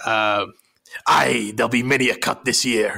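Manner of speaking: put-on pirate voice and accent. Quoting a character who threatens Skinner from the shadows in an episode, pirate impression. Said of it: "your pirate impression".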